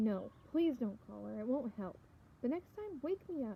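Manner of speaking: ordinary delivery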